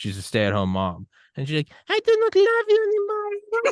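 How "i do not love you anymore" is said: very high and slow Spanish accent.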